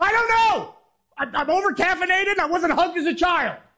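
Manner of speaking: yelling through tears. Answering Jerry, who asked why they are yelling, crying while yelling. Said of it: "Are you crying?".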